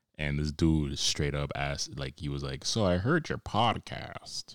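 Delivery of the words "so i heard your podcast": slow, unhurried, deliberate, drawn-out delivery. Retelling a dude's question about the podcast: Morgan Freeman voice. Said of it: "sounded like fucking, like, uh, Morgan Freeman".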